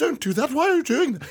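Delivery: very high, droid-like voice. Describing R2-D2 sounding upset, the speaker voices him in C-3PO voice. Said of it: "A perfect imitation".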